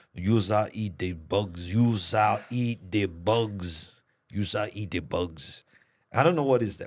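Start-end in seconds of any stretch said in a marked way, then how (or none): 0.2-5.7 bugs dropped deep and dragged out. Recalling a voice others compared to a star, the speaker does an Arnold Schwarzenegger-like voice. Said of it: "I sounded like something Arnold Schwarzenegger".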